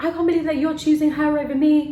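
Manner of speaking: full-on loud, accusing scream. Retelling what a girl screamed while chasing them: imitating someone screaming. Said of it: "she was screaming at us like this".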